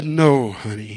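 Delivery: pulpit-style, pastor-like preacher delivery. Retelling how he answered his wife, in his best preacher voice. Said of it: "in my best preacher voice".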